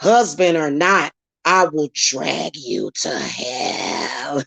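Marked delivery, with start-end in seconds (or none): 1.5-4.4 put-on demon voice, deep and dropped low. Mid-rant, the speaker switches into a demon voice. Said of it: "Hit the thumbs up for the demon voice".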